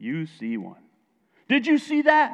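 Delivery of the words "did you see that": high scream, sounding far off. Narrating a story where a UFO appears, Benjamin screaming from the other side. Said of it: "Benjamin screams from the other side".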